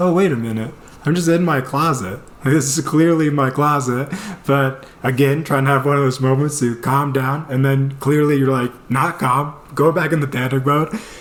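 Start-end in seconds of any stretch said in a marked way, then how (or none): none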